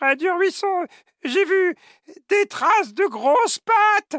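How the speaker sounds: very high, out-of-breath little voice. Narrator voicing the little snail arriving out of breath, tiny breathless voice. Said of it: "tout essoufflé et dit de sa toute petite voix".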